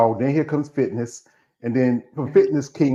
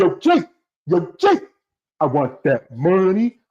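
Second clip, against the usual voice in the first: slow, deliberate, drawn-out delivery; 5 semitones higher than usual. Calling out a name, doing a Denzel impersonation for the screen. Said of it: "I'm doing my Denzel impersonation".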